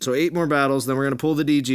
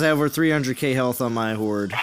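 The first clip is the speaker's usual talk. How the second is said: ordinary talk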